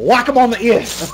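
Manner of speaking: slow Australian bloke accent impression.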